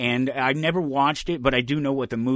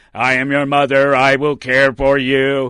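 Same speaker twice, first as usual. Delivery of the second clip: very loud, flat put-on robot monotone; 10 dB louder than usual. Telling of a robot with nasty teeth, robotic put-on voice. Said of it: "it speaks in a voice like this".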